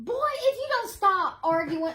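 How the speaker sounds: put-on scolding voice. A guest, asked to reenact their mom disciplining them: imitating mom scolding. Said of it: "your mom's voice, like getting after you".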